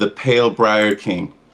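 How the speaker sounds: dark, foreboding, low ominous delivery. A player in character names who the disguised hag worked for, ominous. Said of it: "say this ominously and lower my head".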